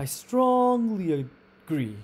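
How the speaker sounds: "strongly" stretched, loud, high, hit hard. Explaining emphatic stress with an example sentence, emphatic stress on strongly. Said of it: "You can see that it's lou- louder, longer, and it has a higher pitch".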